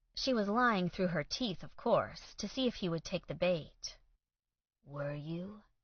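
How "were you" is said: low, soft, husky voice. Reading a romance scene, the man asking her softly: low husky voice. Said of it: "he said in a low, husky voice".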